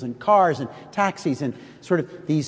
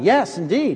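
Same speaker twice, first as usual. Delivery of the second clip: put-on proud voice. Retelling what the host said in reply, imitating a proud answer. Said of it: "my host said proudly".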